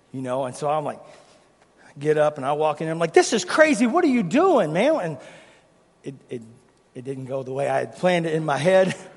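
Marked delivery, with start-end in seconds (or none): 3.1-4.9 loud, heated, fired-up confrontational tone. Retelling walking in to confront the dad: imitating own fired-up confrontation. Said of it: "I'm just fired up".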